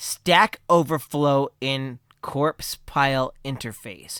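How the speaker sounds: slow, deliberate delivery, spaced out word by word. Announcing a long album title to the audience: said slowly. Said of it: "I gotta say this slowly".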